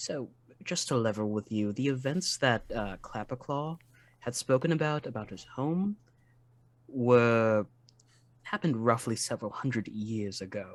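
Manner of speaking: very hushed, quiet whisper. Pulling a fellow character aside for a minute, very hushed whisper. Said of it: "In like a very hushed whisper".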